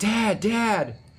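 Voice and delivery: mock hollering, high-pitched shouting.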